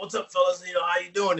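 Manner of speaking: put-on New York accent. Retelling the Brooklyn Brawler getting in the car: Brooklyn Brawler's New York accent. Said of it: "he has his New York accent".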